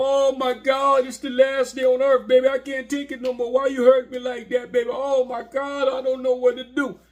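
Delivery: fake sobbing through every word, high pitched. Acting out a man going through something with his baby: mock crying. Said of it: "Stop crying in front of all these women".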